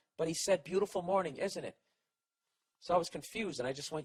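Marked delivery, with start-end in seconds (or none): 0.6-1.8 play-acted faux-friendly call-out with sarcastic edge. Retelling what the old neighbor shouted from his window: imitating a sarcastic yell. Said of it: "Why is he yelling".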